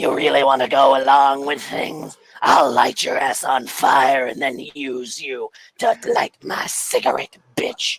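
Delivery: worn-down, rough, throat-wrecked character voice. Introducing a character named Pyre and how he speaks, smoke-damaged Pyre voice. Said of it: "smoke and the fumes have really done things to his voice".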